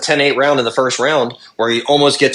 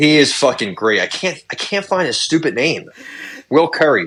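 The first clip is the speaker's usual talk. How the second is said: ordinary talk, nothing marked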